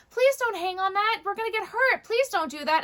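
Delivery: voice lifted a whole octave, very high. Retelling what the speaker says to a kid, voice raised an octave. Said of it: "I raise my voice an octave".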